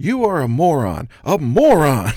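very loud, slow, drawn-out taunt with big swoops. Retelling how a commentator insulted another after a match: Jerry Lawler impression. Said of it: "That's the way he says it".

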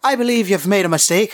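loud character voice. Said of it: "loud enough so that anybody can hear me".

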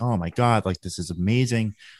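usual speaking voice

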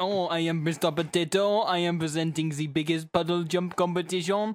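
put-on French accent. Retelling a cartoon potato presenting a puddle jump competition, Mr. Potato French accent. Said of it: "a potato with a moustache and a French accent".

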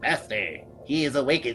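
chittering, creaturely speech. Narrating to a player who is waking up, voicing one of the watching creatures, chittering voice. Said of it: "in a sort of chittering voice".

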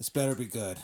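imitated gruff, put-on cop voice. Retelling what the cop said when you called him, gruff Herbert Crumbs voice. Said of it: "A very gruff voice answers".

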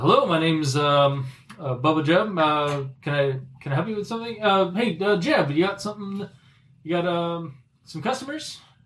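put-on hesitant, halting, stumbling man's voice. Voicing Bubba greeting customers behind the counter: voicing Bubba the shopkeeper. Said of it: "It's like".

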